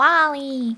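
put-on animated cartoon character voice. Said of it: "I say it in Wally's voice".

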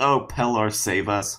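low, slow mutter under the breath. Voicing a character in a fight calling on pellar to save them: muttering. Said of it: "Colette mutters".

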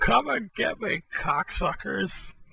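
high, taunting yell. Taunting hidden soldiers through a door opening: yelling a taunt. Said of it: "I'm gonna yell, uh, yell out the, out the door".

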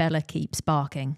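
plain

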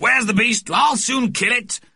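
very high-pitched, shrill, raging yell. The moustached man prowls the room hunting the beast, shouting.

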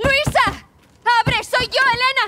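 calling out at full voice, loud and high. Calling to someone inside to open the door, shouting. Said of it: "¡Deja de gritar!".

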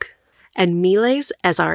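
ordinary delivery

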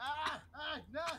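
panicked screaming.

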